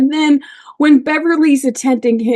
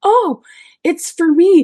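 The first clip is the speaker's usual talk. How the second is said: dawning surprise, voice lifting in pitch; 6 semitones higher than usual. Retelling an actor's end scene, imitating Patrick Stewart's surprise. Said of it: "The surprise on his face and in his voice".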